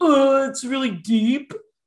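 put-on loud, high fifteen-year-old boy voice. Speaker imitates how fifteen-year-old students talk about a story: fifteen-year-old boy voice. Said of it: "Fifteen-year-old boy's like".

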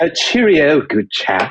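put-on British accent. Asked to do it again, the speaker tries once more: fake british accent. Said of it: "do that again".

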